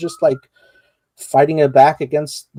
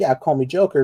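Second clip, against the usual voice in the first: ordinary talk, nothing marked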